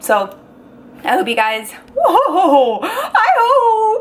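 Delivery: voice cracking and breaking, very high pitch. Sharing something personal with you guys, voice cracking. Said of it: "My voice just cracked".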